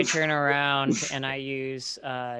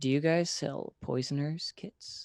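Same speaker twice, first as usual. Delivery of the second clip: hushed, low whispered voice. Leaning in to the halfling to ask a question, in a low whisper. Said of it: "I whisper or I kind of like say in a low voice".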